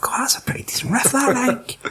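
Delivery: high, excited whispering. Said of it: "I'm like".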